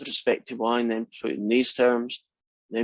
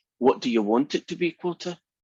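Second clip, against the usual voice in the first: whispered speech; 3 semitones higher than usual. Retelling what a man said close to the interviewer's ear, retelling a whisper. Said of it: "he goes really close to his ear and he whispers".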